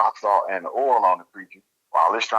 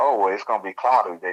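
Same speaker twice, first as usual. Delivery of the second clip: mock casual, matter-of-fact, offhand, no-fuss tone. Retelling what she said after hearing the story: imitating a matter-of-fact tone. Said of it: "in such a matter-of-factly tone".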